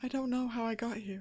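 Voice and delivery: timid, meek, small high voice. Playing the figure in the cage, asked why it is there, meek voice. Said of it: "but very kind of meek".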